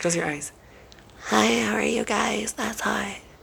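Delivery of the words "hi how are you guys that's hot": slow, creaky voice, dragged out with a creak. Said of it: "I'm gonna be Paris".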